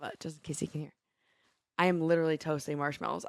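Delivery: soft, hushed half-whisper, under the breath. Speaking so someone nearby can't hear, half-whispering. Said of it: "I don't know why I'm whispering".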